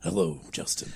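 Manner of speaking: very soft, breathy, barely audible whisper. Imagining Jigsaw in court after another speaker forgets his voice: Jigsaw voice. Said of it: "I forget what he sounds like".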